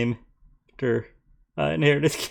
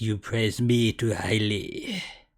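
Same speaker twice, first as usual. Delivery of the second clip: put-on French accent, quieter; 4 semitones lower, 4 dB quieter than usual. Reading a character's script line aloud, trying Lamora in a French accent. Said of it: "Let me try reading that line in a French accent".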